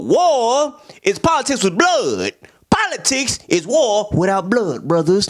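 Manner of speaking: lecturing tone, War drawn out. Retelling the film's class scene, imitating Fred Hampton teaching. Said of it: "the classic Fred Hampton stuff".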